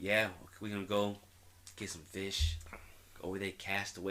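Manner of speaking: put-on easygoing, relaxed Boston accent. Retelling what Craig said about going fishing: Boston accent imitating Craig. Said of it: "There's the accent".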